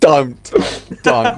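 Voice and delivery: high, loud, pleading voice on don't.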